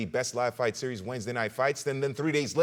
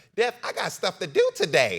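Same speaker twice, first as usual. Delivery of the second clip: high, loud, swooping comic voice; 7 semitones higher, 5 dB louder than usual. Breaking from the fight talk with a quick bit: Katt Williams impression. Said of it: "There's my Cat Williams impression".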